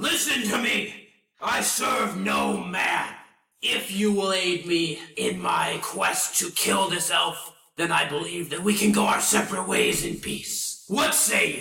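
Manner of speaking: big, hulking goblin character voice. Voicing a big goblin speaking to players in a tabletop game: goblin character voice. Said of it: "He's a goblin, and he's pretty big. I'll join my friend. Can I also roll an insight check? Sure. 18. So you can see on this guy that the armor that he's wearing bears the markings of, like, a high / I".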